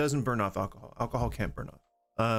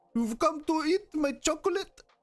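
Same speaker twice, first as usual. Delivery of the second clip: clumsy, bad, very high Belgian accent. Attempting an accent after saying they can't do it: attempted Belgian accent. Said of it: "what would be a Belgian accent?".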